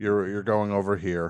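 mock low-energy, unenthusiastic voice. Retelling how ride guards directed the group: imitating low-energy guards. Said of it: "You're lucky if you're getting this much energy".

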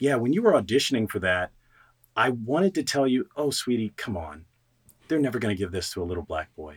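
gentle, tender, soft, low motherly voice. Recalling what his mother told him years later about his audition, quoting his mother. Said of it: "my mother told me".

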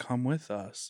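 whispered, slow, calm, monotone zombie drone. Retelling how possessed, zombie-like people beckoned them, speaker imitates slow, calm speech. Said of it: "but just like slow and calm".

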